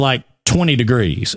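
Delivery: ordinary talk, nothing marked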